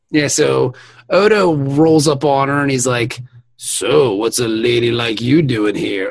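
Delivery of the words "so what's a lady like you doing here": put-on creepy voice. Retelling an episode scene where Odo approaches a woman: imitating Odo sounding creepy. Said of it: "And it does sound kinda creepy".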